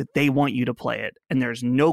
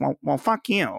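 put-on nerdy old man voice. Imitating George R.R. Martin answering a question, George R.R. Martin impression, nerdy old-guy voice.

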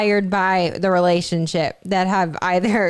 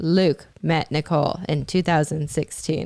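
eerie, flat, deadpan monotone narrator voice; 3 semitones lower, 3 dB quieter than usual. Imitating a fan video's narrator: imitating a creepy monotone narrator. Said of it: "it's creepishly, like, monotone".

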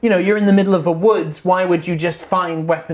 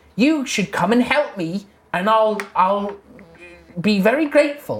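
little halfling wizard character voice; 2 semitones higher than usual. In a tabletop game, an illusion of a halfling wizard addresses the party: Howard voice. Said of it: "And the illusion says to everyone that can see them, and it's a little halfling man wizard. And he says, and you would know, if you were friends with him, you would know that this is [name]".

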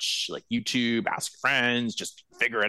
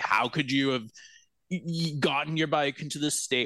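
put-on accusatory, accusing, reproachful tone; 3 semitones higher than usual. Imitating a car mechanic judging a customer's bike: imitating an accusatory tone. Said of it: "this accusatory tone".

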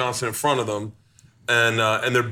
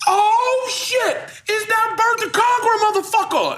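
very high, thrilled, drawn-out excited cry; 4 dB louder than usual. Retelling how a stranger at a bar recognized him: imitating an excited fan. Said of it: "he got so excited".

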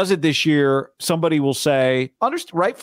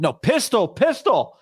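acted, high, pitched-up hollering yell; 7 semitones higher than usual. Recounting a football play, quote a player calling out at the line-up, imitating someone yelling. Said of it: "Juszczyk yelled".

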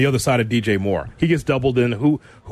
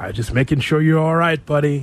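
soft, higher, put-on bedroom voice; 4 semitones higher than usual. Showing the bedroom voice of Cap that people are not aware of, Cap's soft bedroom voice.

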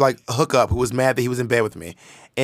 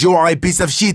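put-on French accent, higher and louder; 4 semitones higher, 4 dB louder than usual. Retelling what a man in a dark room said: imitating a French accent. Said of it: "He had a French accent".

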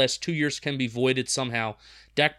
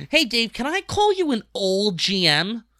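put-on high, pitched-up voice sounding like a teenager; 9 semitones higher, 4 dB louder than usual. Retelling a guy asking Dave a weird question, Steve Serby impression, sounding fourteen. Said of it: "he sounded like he was fourteen".

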